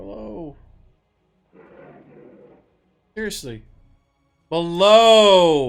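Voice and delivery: very loud frustrated yell. Player whose interface is not doing what they want, yelling at the interface. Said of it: "I'm yelling at my interface".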